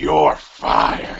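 deep, low, loud, rough barking voice. Doing a requested catchphrase: Vince McMahon "you're fired" impression. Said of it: "do your Vince McMahon, you're fired impression".

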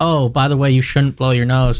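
normal talking voice

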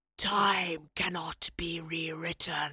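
raspy, hoarse, rasping voice. Narrator reads the Keeper answering the weeping professor, raspy voice. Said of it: "the Keeper rasped".

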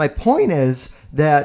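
slow voice cracking and breaking mid-phrase. Making a personal confession about his girlfriend; voice cracking. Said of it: "my voice is cracked".

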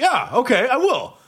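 put-on, weirdly sarcastic, high and drawn out. Retelling a celebrity's replies at a meal: imitating Joaquin Phoenix being sarcastic. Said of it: "He was just being so sarcastic and weird".

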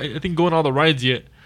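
normal talking voice

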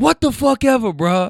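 full-throated, loud yell, very high pitch. Retelling a man and woman arguing by a car, retelling his yell. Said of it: "He yells".

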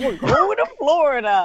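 dopey cartoon dog voice. Retelling answering people at Disney World, in a Goofy-sounding voice. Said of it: "You sound like Goofy when you say it".

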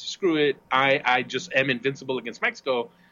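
ordinary talk

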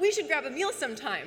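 normal talking voice

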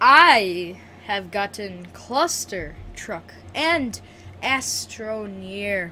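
slow, clear, every word distinct, drawn-out I. Showing a guest how to repeat their answer, slow and clear. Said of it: "Say that slower and a little bit more clear".

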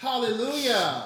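very high, very loud, booming admiring shout. Joking about a church service at home, then shouting hallelujah. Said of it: "I will shout right now in this apartment".

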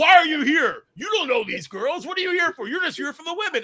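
put-on very high, drunk, hostile and challenging voice. Recounting how hammered security dudes confronted them, imitating drunk security guys. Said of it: "they would all be hammered".

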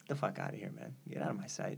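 low, quiet, cold and dismissive.

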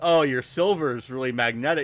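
ordinary talk, nothing marked

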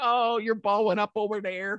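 Chicago-accented speech.

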